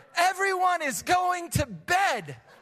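voice lifted a little. A father retells a rare moment of speaking up as a dad; slightly raised voice. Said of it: "I just kind of elevated my voice a little bit".

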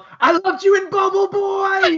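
mock very high, stretched-out, drawn-out shout. Retelling yelling at a passerby on the street around 1 a.m., retelling a yell. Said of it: "I just yelled".

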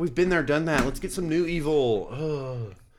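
high, whiny complaining tone. Reacting to a quote just read aloud, in a whiny voice. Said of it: "sorry for the whiny voice".

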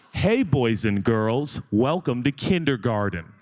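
put-on condescending kindergarten-teacher tone, slow and patronizing. Imitating someone whose tone pats everyone on the head, mock-patronizing, patting heads. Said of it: "his tone is like he's patting everyone on the top of their head".

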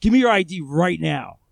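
loud, forceful, aggressive, hard delivery. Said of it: "I'm being very aggressive with him".

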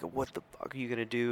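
mock toned-down, mildly confrontational yell. Retelling a shirtless man yelling at an officer: imitating someone yelling. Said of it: "he starts, you know, yelling".

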